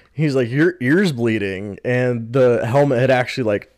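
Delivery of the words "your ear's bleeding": normal talking voice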